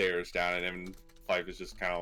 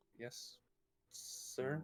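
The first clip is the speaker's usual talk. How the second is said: whisper-soft, trembling, very quiet voice; 6 semitones higher, 11 dB quieter than usual. Fife gives a salute in a role-play scene; Fife answering shakily. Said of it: "shakily like give him a salute".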